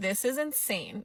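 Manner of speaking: ordinary delivery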